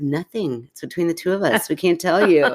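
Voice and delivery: ordinary talk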